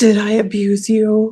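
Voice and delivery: put-on, slow, condescending, belittling, mocking tone. Retelling what a parent asked in the car: imitating a mocking tone. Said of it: "she sounded very mocking because she was like".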